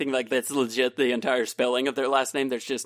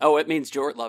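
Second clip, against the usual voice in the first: ordinary talk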